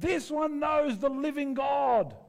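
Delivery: very high, slow, drawn-out hollering shout. Imagining someone following you to the shops: imitating someone shouting. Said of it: "just shouting".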